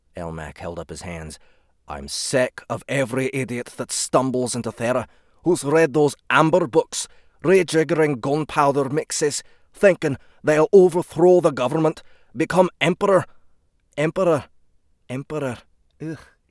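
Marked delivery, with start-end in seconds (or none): 1.9-16.2 very loud, high, put-on Scottish accent. Reading a character's lines aloud: Scottish accent. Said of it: "polish my Scottish accent".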